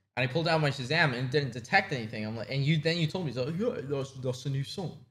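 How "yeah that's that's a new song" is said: decent attempt at a put-on British accent. Retelling what the other speaker said at a concert: imitating a British accent. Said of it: "that's the best British accent you've done".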